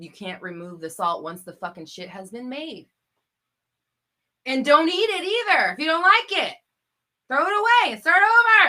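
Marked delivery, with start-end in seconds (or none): 4.5-8.7 very loud, full-throated, swooping ranting yell. Giving an analogy to listeners, yelling. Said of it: "who's yelling?".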